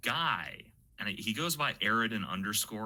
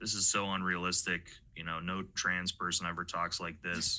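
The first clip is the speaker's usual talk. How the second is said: normal talking voice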